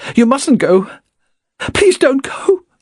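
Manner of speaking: shrill, very high pleading. Reading a story aloud, a woman begs a man not to leave: shrill pleading. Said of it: "said shrilly".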